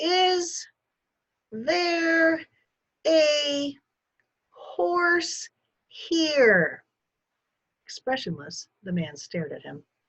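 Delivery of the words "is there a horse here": halting, very slow, loud, very high-pitched delivery. Waving at a man, he speaks to him very slow and loud. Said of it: "began to speak very slowly and loudly".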